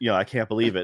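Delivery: ordinary talk, nothing marked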